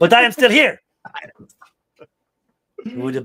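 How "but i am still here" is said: put-on thick Latin accent, higher and louder. Retelling a comedian's bit quoting his mom: imitating a mom's thick latin accent. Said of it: "very Latin mom with a very thick accent".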